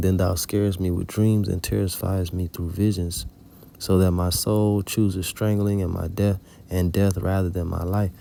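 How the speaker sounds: ordinary delivery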